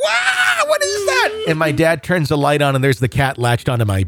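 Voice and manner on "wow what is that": very high, drawn-out shrieking wail, acted. Retelling the night the cat latched onto them, acting out a scream. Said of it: "I also start screaming like".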